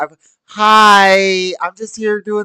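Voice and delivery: syrupy, overly sweet, high, slow voice. Retelling how he worked the old ladies, put-on sweet, slow voice. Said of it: "I put on my sweet voice".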